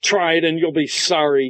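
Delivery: enraged. Narrator reads a man answering a woman's demand that his beard come off, enraged. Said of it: "the rage erupted".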